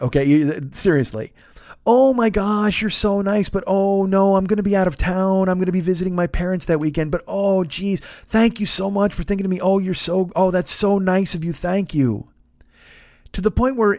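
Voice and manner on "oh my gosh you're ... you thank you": mock syrupy, apologetic, gushing, overly sweet niceness. Reading aloud a reply to an invitation, imitating an overly nice tone. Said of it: "this is the way I read it".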